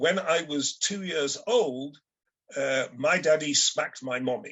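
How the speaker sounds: ordinary talk, nothing marked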